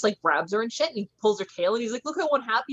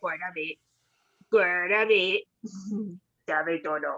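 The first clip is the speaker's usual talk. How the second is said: put-on old, heavyset Italian man voice; 2 semitones lower than usual. Giving her a voice, the speaker talks as an old fat Italian man. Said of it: "We gave her like an old fat Italian man voice".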